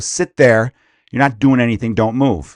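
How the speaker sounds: firm, stern, no-nonsense, not-playing-around tone. Showing how they speak to their kids instead of a timeout, in a not-playing-around tone. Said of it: "In that exact tone of voice".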